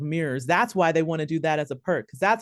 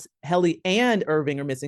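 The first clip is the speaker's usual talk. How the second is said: normal talking voice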